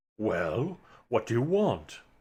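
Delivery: low, unhurried, drawn-out spirit voice. A figure rising from candle smoke asks the hero what they want, deep voice. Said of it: "in a deep voice he says".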